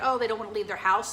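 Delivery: ordinary talk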